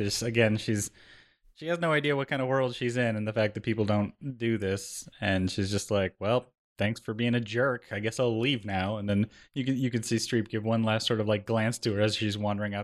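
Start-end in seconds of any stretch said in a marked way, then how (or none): 6.2-9.0 mock sarcastic tone. Describing a film scene, quoting a character as she leaves: retelling a sarcastic thanks.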